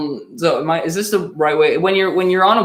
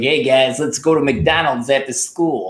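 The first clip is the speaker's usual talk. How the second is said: affected, put-on school kid voice; 3 semitones lower than usual. Recalling a school impression of a kid named Ben: Ben voice. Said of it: "I used to do this impression of him. It was like".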